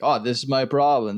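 normal talking voice

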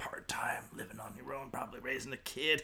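soft, unvoiced whispered aside.

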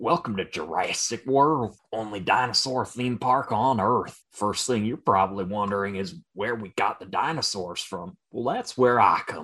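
put-on Southern Alabama accent throughout. Welcoming visitors to jurassic world, in an alabama accent. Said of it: "it's an Alabama accent".

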